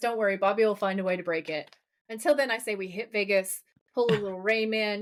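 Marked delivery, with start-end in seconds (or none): none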